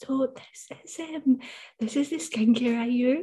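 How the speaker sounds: quiet half-whispered voice. Recalling a first talking video shared in a Facebook group: imitating own past half-whisper. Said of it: "I'm whispering".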